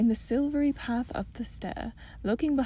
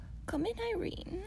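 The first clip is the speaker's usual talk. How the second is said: sweet, soft, very high-pitched voice; 10 semitones higher, 7 dB quieter than usual. The narrator voices the old lady inviting the princess in, in a sweet voice. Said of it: "said a sweet voice".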